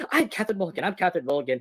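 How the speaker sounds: small, little-voiced, soft delivery. Imitating a film character's catchphrase: high-pitched Catherine Mulligan voice. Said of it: "She literally just has that little high tone of voice".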